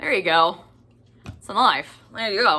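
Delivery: clumsy, really bad put-on Australian accent. Joking while showing a big knife at an unboxing: bad aussie accent. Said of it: "That's a really bad Aussie accent".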